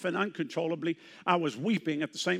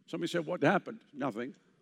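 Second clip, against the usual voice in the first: ordinary talk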